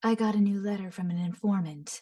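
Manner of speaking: husky, low voice, well enunciated. Showing how a character speaks: husky lower-toned Yelan voice. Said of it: "huskier, lower toned voice".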